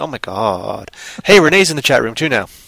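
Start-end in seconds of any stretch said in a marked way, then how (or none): 0.0-0.9 put-on California valley voice, low and soft. Talking about a role, the speaker shows off her California voice. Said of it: "I use my, California voice in that".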